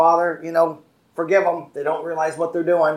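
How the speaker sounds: ordinary delivery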